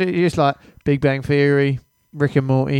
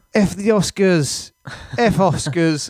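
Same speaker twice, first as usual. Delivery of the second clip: mock very slow, drunk man's loud proclaiming voice; 4 semitones higher than usual. Retelling what a game maker said at an awards show: imitating a drunk man. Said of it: "he was pretty drunk".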